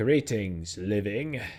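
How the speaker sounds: ancient armored bronze royal guard voice. A game master voices a royal guard greeting those who approach, booming. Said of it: "The thing's voice booms".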